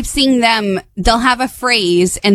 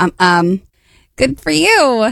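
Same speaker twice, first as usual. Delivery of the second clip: halting, jittery, nervous hesitation with stammering ums; 3 semitones higher than usual. Saying the phrase when asked for nervous: put-on nervous tone. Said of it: "give me ner-, nervous".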